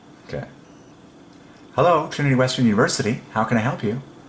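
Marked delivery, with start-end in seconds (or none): 1.7-4.0 high-pitched put-on female voice. Doing a quick impression of someone answering a university phone: impersonating a female voice. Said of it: "impersonating a female voice".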